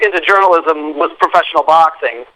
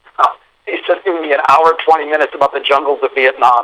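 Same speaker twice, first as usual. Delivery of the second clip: ordinary talk, nothing marked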